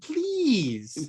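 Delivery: creepy voice, high and drawn out. Imitating the character's line to the other speaker: creepy Chamberlain "please". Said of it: "it's so creepy".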